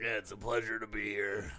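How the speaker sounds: husky throaty voice. Greeting the hosts in character as a tobacco representative: throaty voice. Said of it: "you have a very throaty voice".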